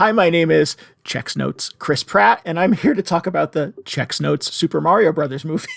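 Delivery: stiff, stilted, wooden, lifeless read. Mocking an actor's stiff movie intro, imitating wooden Chris Pratt. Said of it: "Why are you so wooden?".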